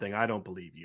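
heavily ironic, sarcastic feigned disbelief. Reacting to claims a coach misled a quarterback: sarcastic fake disbelief. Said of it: "I'm being incredibly sarcastic right now".

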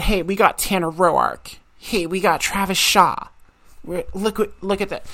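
normal talking voice

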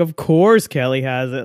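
dry, mocking, sarcastic aside. Retelling what a screwdriver character in a show says: imitating a sarcastic remark. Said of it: "he's so sarcastic about it".

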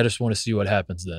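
put-on super-serious monotone. Retelling what his dad said about college basketball: imitating dad's flat monotone. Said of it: "it is just monotone, super serious".

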